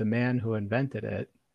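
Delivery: ordinary delivery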